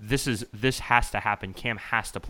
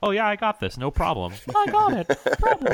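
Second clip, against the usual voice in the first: put-on very high kid voice, pitch swooping and bouncing around; 11 semitones higher, 5 dB louder than usual. Imitating a football player as a child: impression of eight-year-old Tom Brady. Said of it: "That's my impression of eight-year-old Tom Brady".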